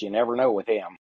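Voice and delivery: put-on flat deadpan delivery. Retelling the wife's answer to the realtor: imitating a deadpan reply. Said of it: "just deadpan as can be".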